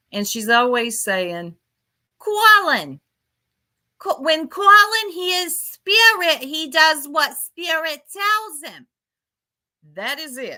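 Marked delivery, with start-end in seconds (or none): 2.2-10.6 very high, put-on Boston accent. Mimicking what Chris is always saying, imitating Chris's Boston accent. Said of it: "she has a Boston accent".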